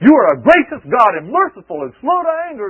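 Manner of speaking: furious, very high, very loud angry shout. Acting out a man fussing at God in prayer, mock-angry prayer voice. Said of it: "in his angry voice".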